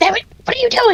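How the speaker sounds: very high-pitched voice. Playing a character who fails to catch a companion falling off the roof: cursing under her breath. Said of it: "she curses under her breath".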